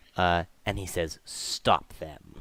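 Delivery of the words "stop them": quiet, soft, low voice. Voicing Vizarin Devere from the far side of the warehouse, speaking softly. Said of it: "he speaks softly".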